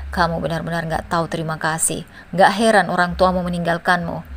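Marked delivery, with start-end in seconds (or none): none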